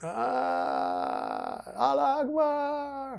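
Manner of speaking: high, slow, drawn-out yell.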